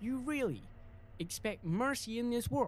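attempted English accent. Voice actor retakes a line in a gang scene: attempted English accent. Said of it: "why can't I do an English accent on that specific line".

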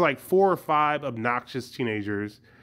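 ordinary talk, nothing marked

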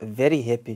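"very happy" said with a Zimbabwean twang. Answering a question about daily mood in two words: Zimbabwe twang. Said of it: "I said it with, like, a, uh, like, a Zimbabwe twang".

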